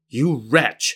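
scolding, berating tone. A mother to her son who disobeyed his master, scolding. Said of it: "his mother scolded him".

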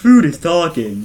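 very loud, strange, weird talking-food puppet voice. Recapping episode five, redoing a voice after a bad first try: talking food impression. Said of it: "That's better".

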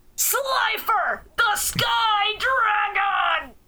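mock wild, punchy anime-dub shout, high and dramatic. Comparing the Japanese voice with the English dub, recreating the dub shout: Dan Green dub shout. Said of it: "the same punch that Dan Green has when he's shouting".

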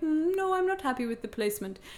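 put-on German accent. Speaker quotes the doctor doing the ultrasound, in a german doctor voice. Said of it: "I love your German medical voice".

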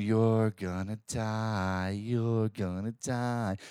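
play-acted very slow taunting, die stretched out. Retelling a movie scene where a woman taunts a pinned man: imitating a woman taunting. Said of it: "she's just, like, taunting him".

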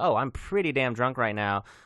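ordinary talk, nothing marked

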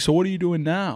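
keen, curious tone. Retelling how a visitor asks about brewing: imitating Ron. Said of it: "he's like".

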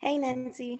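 hushed podcast voice. A guest greets the host on a podcast, in a quieter podcast voice. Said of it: "What is this quieter voice?".

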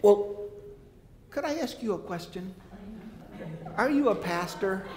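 sweet, high little lady voice. Retelling what the lady sitting next to them asked, in a sweet little lady voice. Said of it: "this sweet little voice from the sweet little lady".

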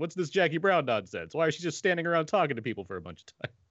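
high, loud, mock disappointed complaining.

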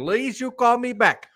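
put-on Russian accent. Retelling a suspicious lottery voicemail, in a put-on Russian accent. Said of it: "a guy with like a Russian accent".

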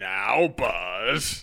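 low voice with one word stretched out. Doing an impression while watching a movie with others: Tom Hanks impersonation. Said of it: "That's my Tom Hanks impersonation".

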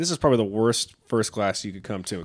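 ordinary talk

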